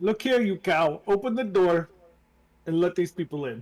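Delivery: loud, put-on, not very good Italian accent. Voicing Ismark answering someone behind a door, in an Italian accent. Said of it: "went from like a Russian Ukrainian accent to an Italian one".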